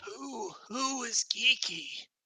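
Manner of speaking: high, slow kobold voice. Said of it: "And he says, like".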